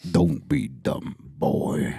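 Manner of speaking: very deep, very slow, rough rumbling voice. Doing a Kratos line after talk of his voice actor: Kratos voice. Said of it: "I'm good at this".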